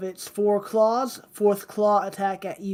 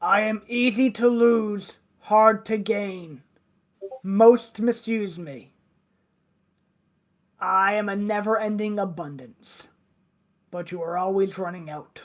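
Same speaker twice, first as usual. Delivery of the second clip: rough, gravel-edged put-on troll voice. Game master voices a speaker posing a riddle to the players, loud gravelly voice. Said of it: "You hear a loud, kind of gravelly voice say".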